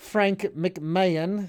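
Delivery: put-on London accent, not-so-great British accent. Reading a text aloud, the speaker starts with a name: London accent. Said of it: "going to read this in my in my London accent".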